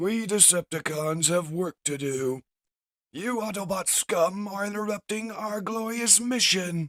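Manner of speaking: very high, loud, mad robot scientist voice. A Decepticon scientist addresses the Autobots, in a mad Decepticon scientist voice. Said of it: "The mad Decepticon scientist states".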